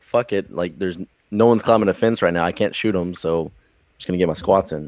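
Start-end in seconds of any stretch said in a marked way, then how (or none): none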